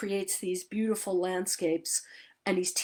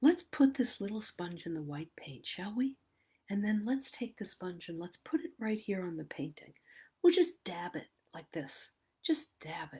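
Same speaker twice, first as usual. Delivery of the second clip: gentle, soft, lulling, soothing voice; 5 dB quieter than usual. Describing a painter teaching while painting, imitating his lulling voice. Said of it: "the lull in his voice".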